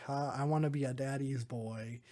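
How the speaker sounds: ordinary talk, nothing marked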